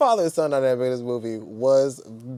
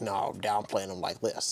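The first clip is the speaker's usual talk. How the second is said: mocking stern voice, lower and quieter; 7 semitones lower, 12 dB quieter than usual. Retelling how the dad character talks in the movie: imitating the dad's stern voice. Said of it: "And he talks just like this. He's got this voice".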